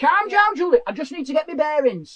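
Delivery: stubborn, defensive, dismissive tone. Acting out the husband's reply during a car row: imitating a husband in a row. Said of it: "he's just staring straight ahead".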